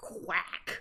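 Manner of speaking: put-on angry duck quack. Reading a game scene aloud, voicing a glaring duck: mock glaring duck quack. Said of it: "the duck is just glaring at you like".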